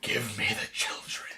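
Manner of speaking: barely voiced, hushed, whispered demonic menace. Retelling a scene, the speaker quotes Leomon: satanic voice as Leomon. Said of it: "in the most satanic voice he can do".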